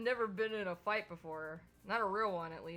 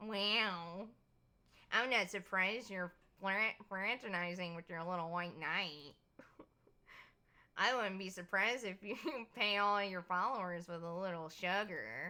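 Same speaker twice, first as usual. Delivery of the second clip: put-on nerdy voice with a drawn-out "wow". Voicing a rival character who confronts the couple: put-on nerdy voice. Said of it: "Should I give him more of a nerdy voice?".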